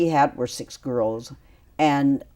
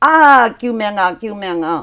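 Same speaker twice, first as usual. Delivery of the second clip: imitated shout at top of voice, higher, louder; 6 semitones higher, 7 dB louder than usual. Retelling how the mother chased the assailant: imitating a shout at the top of her voice. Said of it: "saying at the top of her voice".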